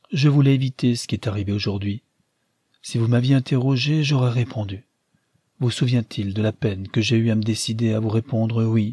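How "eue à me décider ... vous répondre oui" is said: plain reading voice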